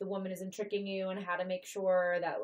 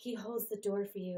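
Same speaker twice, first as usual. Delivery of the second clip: play-acted dreamy voice dripping with sarcasm; 4 dB quieter than usual. Quoting typical relationship-goal posts about men, imitating a dreamy, sarcastic tone. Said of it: "In that dreamy, sarcastic tone".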